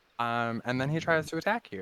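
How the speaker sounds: ordinary delivery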